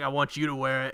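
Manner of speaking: normal talking voice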